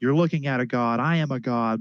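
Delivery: mock small ranting cry, put-on shouting. Retelling a man at a rally shouting at a group: imitating someone shouting. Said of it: "And he's shouting".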